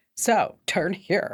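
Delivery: cat voice with a little attitude. Describing the cat voice on a navigation app, imitating the cat voice with attitude. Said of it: "just a little bit of an attitude".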